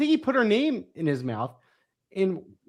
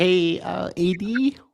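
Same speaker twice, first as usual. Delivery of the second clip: put-on Midwestern American accent. Acting out an office worker greeting the athletic director: imitating Beth with Midwestern accent. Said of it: "why does that person have a Midwestern accent?".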